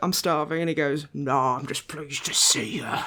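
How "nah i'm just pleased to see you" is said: play-acted, lewd, dirty, suggestive voice. Retelling a gym buddy's reply at the self-checkout: imitating a dirty, suggestive tone. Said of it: "Like a really dirty boy".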